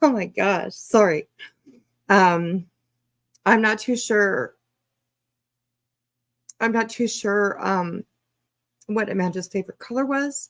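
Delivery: tearful, close to crying. Speaker asks the chat about amanda's favorite color, about to cry. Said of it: "oh God, I'm about to cry".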